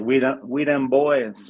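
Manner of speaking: sudden, loud, play-acted hollered call. Telling how a Cowboys fan walked into the gym: retelling a guy's yell. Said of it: "he yells like".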